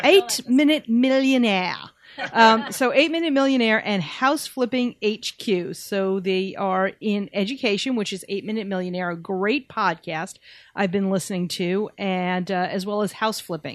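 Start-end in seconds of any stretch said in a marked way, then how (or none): 0.0-1.8 put-on British accent, raised and pitched up. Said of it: "trying to do a British accent for this".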